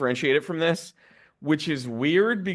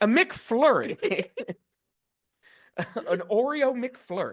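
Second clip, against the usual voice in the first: put-on American accent, pitched up; 8 semitones higher than usual. Imagining Tilda Swinton ordering at a McDonald's, doing an American accent. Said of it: "order in an American. She's like".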